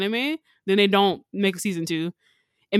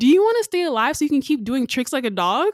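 put-on pure, most innocent little-girl voice; 5 semitones higher, 4 dB louder than usual. Retelling a little girl's question from a show: imitating the most innocent child voice. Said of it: "the most innocent child voice ever".

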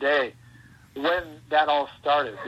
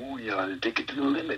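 very low, quiet half-whisper; 4 semitones lower, 6 dB quieter than usual. Speaker describes their favorite version of Macho Man; Macho Man low half-whisper. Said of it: "he's whispering down here real low".

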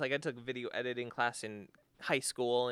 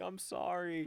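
weepy, tearful, high-pitched crying voice; 6 semitones higher, 3 dB quieter than usual. Retelling how she came back from the beach: imitating someone crying. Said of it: "she comes back crying".

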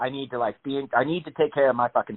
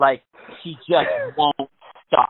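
ordinary delivery

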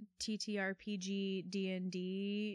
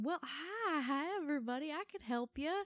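put-on little robot voice, slight Southern accent, pitched up; 7 semitones higher than usual. Describing a player's little robot cleric character: little southern accent. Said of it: "a little southern accent like this".

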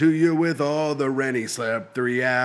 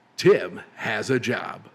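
lower, put-on radio announcer voice; 5 semitones lower than usual. Trying the impression again after being told it failed: Casey Kasem impression. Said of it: "That is kinda close".

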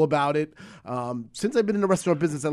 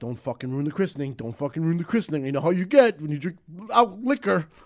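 put-on man voice. Retelling his wife's warning before their son's christening, man voice for her. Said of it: "Why am I giving her a man voice?".

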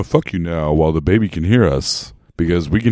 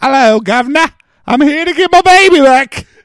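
bad British accent, high-pitched and loud; 6 dB louder than usual. Retelling the mom from London, doing Nancy Travis's bad British accent. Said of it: "she has a bad British accent. She goes".

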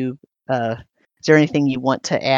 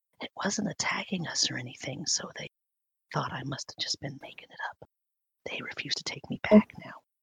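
lowest possible, barely audible whisper; 12 dB quieter than usual. Game master voicing a character who leans over to a player: whispering as low as possible. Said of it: "she tries to whisper as low as she can".

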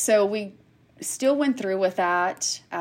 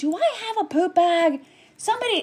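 mock, very high, shrill, full-lung scream; 11 semitones higher than usual. Speaker retells calling out in the hallway in her gown, retelling her own screaming. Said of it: "screaming at the top of my lungs".

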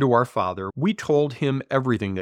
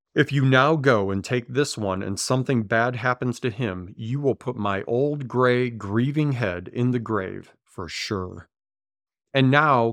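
ordinary talk, nothing marked

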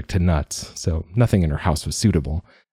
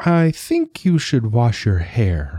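gentle, slow, lightly raised voice; 6 semitones higher than usual. An old witch, consulted by Lita for help, offers her advice gently. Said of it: "the old witch said gently".

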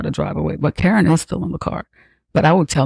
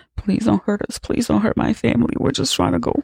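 put-on tearful, high, crying, pleading voice; 7 semitones higher than usual. Speaker retelling a story, acting out Bjorn's words, imitating Bjorn crying. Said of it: "Bjorn is crying".

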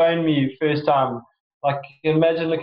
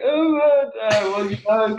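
stunned, slow, pitched-up, lost-for-words mumbling; 6 semitones higher than usual. Retelling being asked what they do and freezing up; acting out own mumbling. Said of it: "I just start mumbling".

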